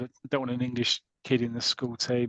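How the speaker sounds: normal talking voice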